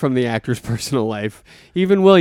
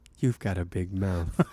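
creepy, menacing, hushed voice; 6 semitones lower, 12 dB quieter than usual. Performing a line reading called really creepy: creepy line reading. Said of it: "The way you just did the line reading, ... really creepy".

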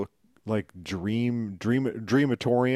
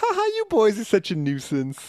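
very high, swooping, laughing through the words; 10 semitones higher than usual. Retelling a comic scene where a character laughs at the boys: imitating someone laughing while talking. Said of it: "Namorita's laughing".

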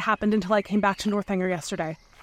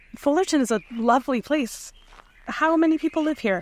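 awkward, nervous, pitched-up chatter; 5 semitones higher than usual. Henry makes small talk while out on a walk, nervous small talk. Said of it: "I'm a little nervous".

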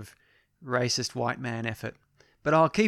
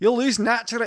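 put-on slight Scottish accent, pitched very high; 10 semitones higher, 5 dB louder than usual. Retrying a character's line after a failed take; a bit of Scottish accent. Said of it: "I'm doing a bit Scottish".

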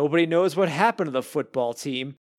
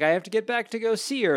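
put-on fast, heavy Italian accent laid on thick; 7 semitones higher than usual. Recounting a scene from a show's first-season finale, imitating Tone's thick Italian accent. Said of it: "he suddenly has like this very thick accent".

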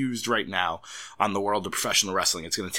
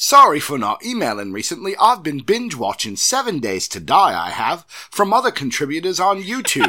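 loud, high, put-on English accent, read aloud; 6 semitones higher, 6 dB louder than usual. Reading a listener's email aloud on the show, in an English accent. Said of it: "Can you read this in an English accent?".

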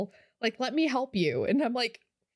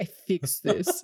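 put-on Belarusian accent; 4 semitones lower than usual. Retelling a coworker's phone call: imitating Oksana's strong Belarusian accent. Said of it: "this really strong, like, Belarusian accent".

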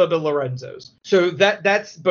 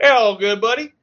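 very heavy exaggerated American accent, pitched up; 5 semitones higher, 4 dB louder than usual. Speaker recounts Sadler posing as someone to airport controllers: Sadler's exaggerated American accent. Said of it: "he puts on even a more American accent".

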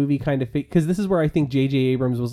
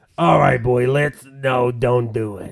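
put-on rough, elderly female voice; 2 semitones lower, 4 dB louder than usual. Imagining Carrie Fisher appearing to Kylo and Rey: gravelly Carrie Fisher voice. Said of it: "her voice is gravelly by these movies".

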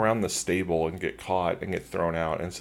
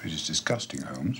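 put-on flat deadpan, quieter; 3 semitones lower, 5 dB quieter than usual. Retelling a Holmes scene, the speaker quotes Hardwick's reply: deadpan Hardwick line. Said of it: "deadpan, Hardwick just goes".

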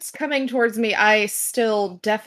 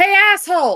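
high, loud, shrill yelled shout upward; 10 semitones higher, 7 dB louder than usual. Calling up to a creature flying high in the air: shouting up. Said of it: "use thaumaturgy to shout up".

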